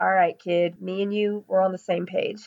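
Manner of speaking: ordinary talk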